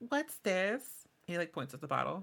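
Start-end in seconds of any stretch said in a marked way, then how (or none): 0.1-0.8 put-on high little kobold child voice. During the scene, a player voices the approaching kobold child in a kobold child voice. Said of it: "this kobold child comes up to you".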